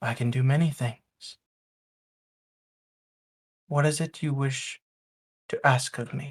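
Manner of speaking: cold, calm, even, composed voice. Voicing the shadow figure answering the visitor's question: cold, calm voice. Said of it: "You hear a cold, calm voice".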